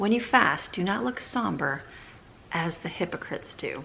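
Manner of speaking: normal talking voice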